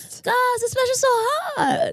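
put-on very high, tipsy rich-woman voice. Repeating the other speaker's line, in a put-on drunk rich woman voice. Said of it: "You sound like the shittiest faced, very rich woman".

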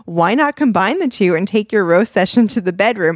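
plain

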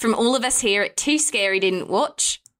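fake, laid-on, exaggerated Australian accent. Signing off for everyone at the show: put-on Australian accent. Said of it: "how can we do an Australian accent".

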